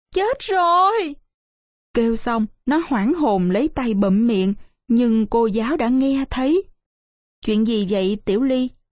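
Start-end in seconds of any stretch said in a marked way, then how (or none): 0.2-1.2 sudden, high, jolted cry of surprise. Tiểu Ly, caught off guard when the ink blot hits her notebook: startled cry. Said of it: "Tiểu Ly giật mình kêu lên".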